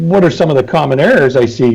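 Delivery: ordinary delivery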